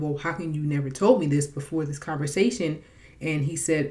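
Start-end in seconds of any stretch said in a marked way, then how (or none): none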